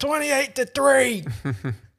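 put-on good-natured New England accent. Retelling what someone on a bus said to a friend in a Falcons shirt, New England accent. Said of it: "I heard in this New England accent".

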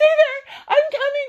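put-on, high-pitched screamed call. Retelling a raft trip, speaker reenacts calling to someone clinging to a cliff: retelling a scream. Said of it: "and I'm screaming at you".

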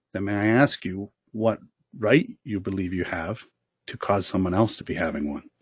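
soft, hushed, very quiet, low voice. Retelling a reply to someone who denied having a bad day, very quiet. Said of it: "And so I very quietly said".

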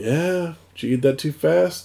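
nonchalant, really cool. Retelling how a calm killer dad reacts to a poisoned kid: imitating a nonchalant tone. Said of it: "just really cool about it".

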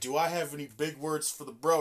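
ordinary talk

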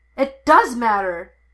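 sudden, full-force, very loud yell. A man contradicts his brother, who says it doesn't matter: yelling. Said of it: "Anakin yelled".

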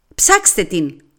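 shouting. Narrator reading one woman accusing another in a quarrel, shouting. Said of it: "φώναξε η άλλη".

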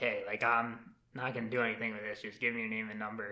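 low, hushed, confiding half-whisper. Speaker retelling what a woman's husband half-whispered to him, retelling a half-whisper. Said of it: "he kind of like whispers to me".

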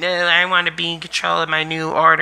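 whiny, pitch nudged up. Talking about Star Wars, mocking a villain: whiny Kylo Ren impression. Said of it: "you got Kylo Ren whining".

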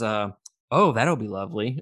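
acted sarcastic delivery. Recounting the scene where they ground AJ and Liv answers, retelling a sarcastic remark. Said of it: "And it's so sarcastic".

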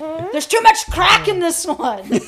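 mock chef ranting voice, high-pitched and loud.

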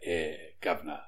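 very low, very soft, hushed hard Cockney mutter. Podcast guest answering the host in his thief NPC voice, hard Cockney accent. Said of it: "gone hard Cockney".

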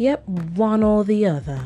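nice, polite, courteous tone. Showing the tone they used with someone, in a put-on polite voice. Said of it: "you Hear that tone?".

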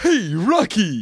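calling out, high cartoon voice. Comparing a cartoon dog's voice to another cartoon: Bullwinkle voice. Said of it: "Like, you know, like".

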